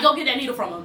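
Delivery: ordinary talk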